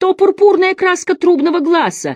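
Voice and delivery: cried out, exclaiming, very high-pitched. Messer Salimbeni responds to the master's cry about the sign, exclaiming. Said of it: "воскликнул мессир Салимбени".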